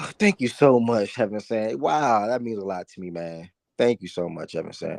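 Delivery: sarcastic-sounding delivery. Thanking another speaker for a compliment on commercials, sounding sarcastic. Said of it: "I know I sound sarcastic".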